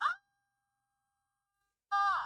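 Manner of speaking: loud piercing scream. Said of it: "a loud, piercing cry".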